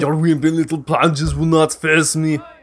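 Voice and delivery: put-on Austrian accent. Quoting a boxer, the speaker does an Arnold Schwarzenegger accent. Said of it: "Arnold Schwarzenegger accent".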